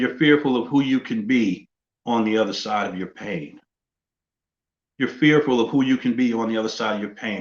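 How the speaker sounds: plain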